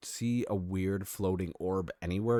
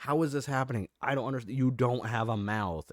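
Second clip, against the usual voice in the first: mock bewildered, screaming outcry of disbelief; 4 semitones higher than usual. Retelling a comic scene where a character panics: imitating a character screaming. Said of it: "Marshall's just screaming, like".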